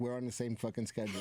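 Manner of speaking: ordinary delivery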